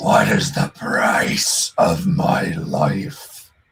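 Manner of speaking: deep, resonant booming voice. Voicing a ship that speaks to the crew: deep voice. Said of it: "as you hear this deep voice".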